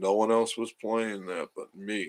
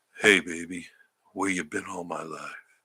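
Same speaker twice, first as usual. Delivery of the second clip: really deep, very low voice; 2 semitones lower than usual. Describing the morning voice used for commercials, in a really deep voice. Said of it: "really deep and".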